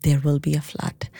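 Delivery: mock, low, dark, foreboding, ominous voice. Parent retells what their four-year-old told everyone, in a mock-ominous voice. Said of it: "in an ominous voice".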